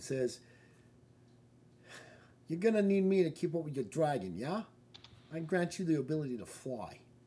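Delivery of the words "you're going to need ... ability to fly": put-on loud, high Brooklyn yo-style accent. Voicing one of the coins, in a brooklyn accent. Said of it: "I almost see it like a Brooklyn accent".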